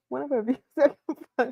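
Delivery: talking through laughter. Reading out a viewer's comment, laughing while talking. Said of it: "Let me get it together".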